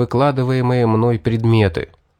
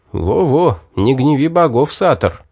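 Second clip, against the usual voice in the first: plain reading voice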